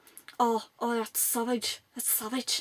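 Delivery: really bad, clumsy fake Irish accent. Retelling a meeting, the speaker quotes a man's reaction to a drawing: really bad Irish accent. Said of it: "this is my really bad Irish accent".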